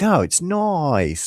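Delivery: very high-pitched put-on New Zealand accent. Retelling what a girl from New Zealand said back, imitating her New Zealand accent. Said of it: "this girl from New Zealand".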